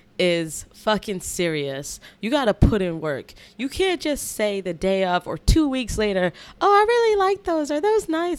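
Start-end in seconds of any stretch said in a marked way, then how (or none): 6.6-8.4 put-on ladylike female voice, much higher. Talking about shoe releases, the speaker acts out someone admiring shoes in a put-on lady voice. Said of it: "I don't know why I'm making a different voice".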